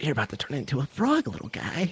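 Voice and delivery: very quiet hushed whisper, close to the ear. In a role-play game, stroking a creature's ear as it munches, the player is whispering. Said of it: "And I whisper in his ear".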